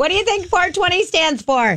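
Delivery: high, mild mock yell, called out. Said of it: "and I scream at a stoplight".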